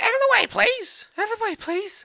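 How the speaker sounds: put-on girl's voice. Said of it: "I'm making your girl's voice".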